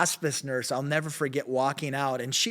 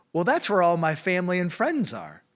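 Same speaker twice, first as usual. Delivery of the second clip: put-on heavy, thick, laid-on British accent; 4 semitones higher than usual. Retelling an old man's answer about whether he is excited about heaven, thick British accent. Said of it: "in the thickest British accent".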